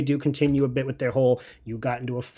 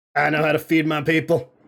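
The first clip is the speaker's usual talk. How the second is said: guttural, throaty chef voice from the throat. The unseen chef calls out from the bar, in a very deep guttural voice. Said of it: "a very deep guttural".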